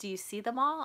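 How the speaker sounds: put-on whisper. Retelling what a brother asked upstairs: imitating a whisper. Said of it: "my brother whispered to me".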